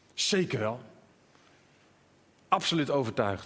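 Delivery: put-on firm, utterly convinced, absolutely certain tone. Imagining Petrus standing up and answering: acting absolutely certain. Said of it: "heel absoluut, heel stellig".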